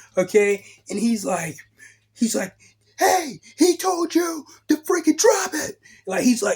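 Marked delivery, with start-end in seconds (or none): 3.0-5.8 mock very high, shrill scream, very close. Speaker retells a man who busts back through the door, imitating someone screaming. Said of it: "He's screaming in my face".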